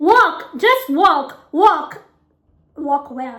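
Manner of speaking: put-on slow West African accent. Retelling a phone call to set up an appointment, in a west african accent. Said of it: "again, West African accent".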